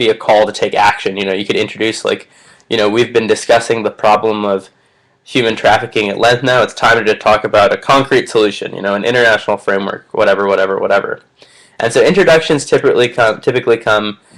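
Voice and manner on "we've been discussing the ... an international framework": normal talking voice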